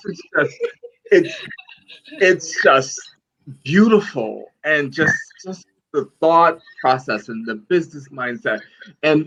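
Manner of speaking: moved, emotional gushing with swooping pitch. Speaker offering the guests a virtual hug, getting emotional. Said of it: "I'm getting emotional".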